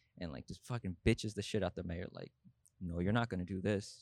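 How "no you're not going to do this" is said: put-on low, evil voice, pitched lower. Retelling a South Park scene where Jeff Bezos refuses the mayor: low evil voice imitating Jeff Bezos. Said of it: "just very low, just very evil".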